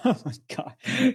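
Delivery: laughing while talking. Reacting to another speaker's remark, laughing while talking. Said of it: "Sorry for laughing about that".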